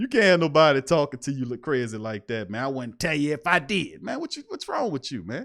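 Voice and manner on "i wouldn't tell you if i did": mock snide, nasty-mouthed, rude tone. Retelling a coach's reply to a reporter: imitating someone talking nastily. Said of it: "Why you talking like that?".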